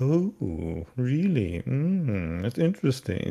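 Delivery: very slow, odd, creepy, swooping drawl. Retelling a movie scene, the stranger answering lost travelers: imitating a strange-talking character. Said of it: "He talks very strange".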